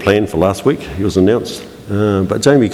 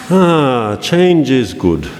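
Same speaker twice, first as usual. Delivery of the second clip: put-on Jamaican accent with raised pitch; 5 semitones higher than usual. Quoting a famous line to an audience, in a Jamaican-accented Rafiki voice. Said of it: "With a Jamaican accent".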